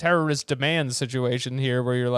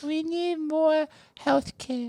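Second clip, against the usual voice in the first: put-on child's voice, higher. Doing a child's voice bit as Baby President, a child's voice. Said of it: "He's so good at it".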